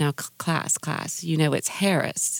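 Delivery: put-on older Southern matronly teacher voice. Retelling what an old high school English teacher always said: imitating Llewellyn Connolly. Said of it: "a very Southern matronly English teacher".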